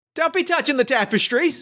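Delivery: put-on indignant guard voice. Voicing a guard who catches a player near the tapestries: indignant guard voice. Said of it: "a tall guard ... marching towards you".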